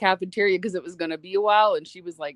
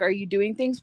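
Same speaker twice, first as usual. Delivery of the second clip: ordinary talk, nothing marked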